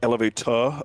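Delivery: mid-Atlantic accent, halfway English pronunciation. Showing how a voice line was first recorded: halfway English pronunciation. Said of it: "like, a, uh, like, halfway English".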